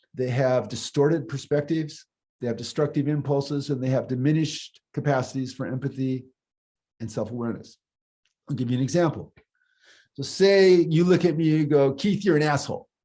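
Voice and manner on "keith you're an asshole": put-on tone, sounding serious and sincere. Giving an example of someone insulting the speaker: imitating a sincere insult. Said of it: "you say it like you mean it".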